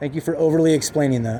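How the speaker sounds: usual speaking voice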